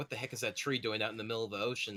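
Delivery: ordinary delivery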